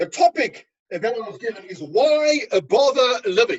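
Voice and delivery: British accent, done on purpose. Speaker starting a lecture by announcing the topic, in a put-on british accent. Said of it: "How's my British accent?".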